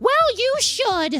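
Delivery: high, slow, indignant, entitled huff.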